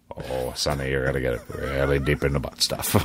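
very deep, calm narrator voice. Asked what the group is about to do, speaker answers: Morgan Freeman impression. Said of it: "Morgan Freeman, would you like to tell us".

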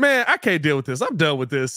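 fed-up, exasperated, completely done tone. Imitating Draymond saying he is done: Draymond impression. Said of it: "was Draymond going".

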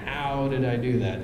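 ordinary talk, nothing marked

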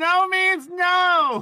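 very high, piercing, shrill yell, "no" drawn out. Voicing the thing blocking the keyhole as someone tries to pick the lock, yelling. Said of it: "it yells".

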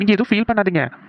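ordinary delivery

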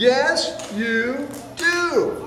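crying out. In a growing argument, one bear insists another needs a bath, crying out. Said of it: "cried Big Fluffy Bear".

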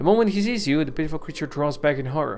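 plain

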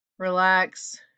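drawled delivery. A student, told to apologize to his classmates, replies, drawling. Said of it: "Rahim drawls".

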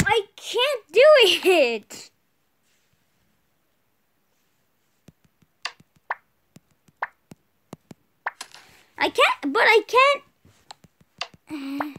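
very loud, high, frustrated, exasperated cry. Stuck on a part of a game: frustrated. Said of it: "I'm getting so frustrated".

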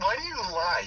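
high, loud, mock outraged, accusing tone.

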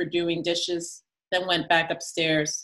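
plain

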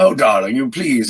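husky, throaty, sophisticated grandmother smoker's voice. Describing a grandmother's smoker's voice: imitating grandmother's throaty voice.

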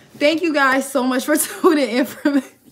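giggling, laughing through the words. Thanking viewers for tuning in, laughing while talking. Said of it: "I can't stop laughing".

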